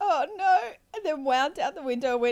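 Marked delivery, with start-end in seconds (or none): 0.0-0.6 high-pitched, embarrassed, mortified exclamation. Retelling a friend's reaction after a joke went wrong: imitating a mortified reaction. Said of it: "she was mortified".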